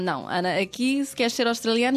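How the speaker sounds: ordinary talk, nothing marked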